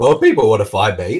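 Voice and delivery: cracking, breaking voice. Podcast guest asked where people can find him online, voice cracking. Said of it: "my voice cracked just then".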